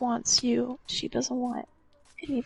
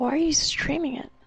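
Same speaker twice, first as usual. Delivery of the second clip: ordinary talk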